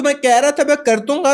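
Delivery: very high-pitched, loud, squeaky voice. Showing how some people talk with a very high pitch: very high-pitched voice. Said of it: "उनकी बड़ी हाई पिच होती है, right? इस तरह".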